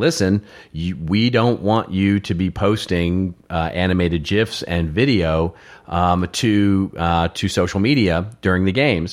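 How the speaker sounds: ordinary delivery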